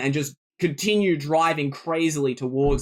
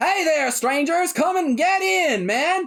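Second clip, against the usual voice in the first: shrill, loud, high-pitched hollering call; 13 semitones higher than usual. A voice calls out to strangers from inside a bus's sliding door; loud shouting call. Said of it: "he's loud too".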